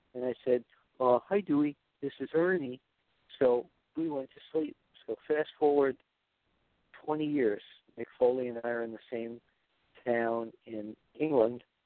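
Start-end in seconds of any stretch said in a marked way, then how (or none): 1.2-2.8 put-on kids' puppet character voice. Retelling answering the child's request to talk to Ernie: Ernie voice. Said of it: "Let me talk to Ernie".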